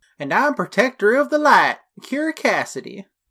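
exaggerated fake Southern accent. Podcast co-host introducing their persona at the show's opening, in a Southern accent. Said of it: "why did you become Southern?".

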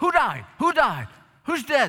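put-on startled, panicked, loud, high blurting. Telling how Martin Luther, startled, questioned the woman entering his study, acting out a panicked voice. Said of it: "In a panicked voice".

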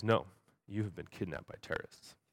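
dead-serious, flat, totally level deadpan delivery. Retelling what a man said to them, still totally serious; imitate his deadpan tone. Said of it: "And still totally serious".

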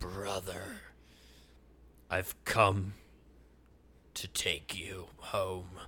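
very quiet, low, hushed hell-demon growl. Retelling what the grinning figure growled at Spark, in a growling hell-demon voice. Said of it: "this voice that sounds like, I don't know, a hell demon just growls".

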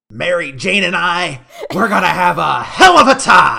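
very loud, high, booming, swooping comic-book villain voice. Recapping a game's villain, then breaking into a Green Goblin voice. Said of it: "That kind of sounded like the Green Goblin".

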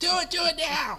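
yelled loudly at high pitch. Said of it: "I'll yell that at people".

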